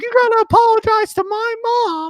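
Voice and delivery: mock shrill, very high, raging screaming fit. Retelling how a man started screaming at them, imitating someone screaming. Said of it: "he started screaming".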